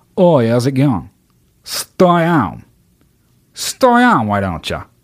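clumsy, put-on Australian accent with swooping pitch. Trying out the accent he just announced, in a bad Australian accent. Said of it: "That's my fucking Australian accent".

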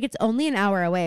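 ordinary talk

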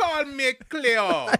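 very loud, very high fake Jamaican accent. Remembering late-night infomercials, the speaker does Miss Cleo's fake Jamaican accent. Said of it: "She was fake Jamaican accent".

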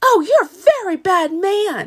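very high, shrill screaming outburst. Retelling the Wizard of Oz curtain scene, Dorothy screaming. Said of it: "she's screaming".

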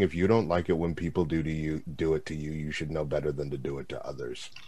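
low, very quiet mutter under the breath. Recapping a show, voicing a character putting another down, under his breath. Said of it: "under his breath going".

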